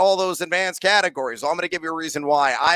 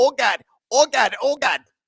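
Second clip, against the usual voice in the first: put-on Chicago accent, pitched up; 7 semitones higher than usual. Recalling ladies he dated from Chicago, the speaker is imitating a Chicago accent. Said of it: "they all talked like this".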